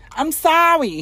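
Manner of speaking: put-on very high, loud Italian woman's accent. Imitating a voice they keep repeating, put-on italian lady accent. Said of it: "I'm trying to do the voice. She's like".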